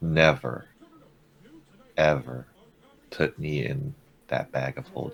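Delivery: grave, hushed, low, very quiet, dead serious. Voicing a talking weapon as everything goes quiet: dead serious voice. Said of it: "he sounds dead serious".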